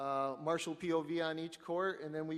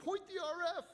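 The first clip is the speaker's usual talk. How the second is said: yell pitched way up high. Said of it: "guys in the pits yelling".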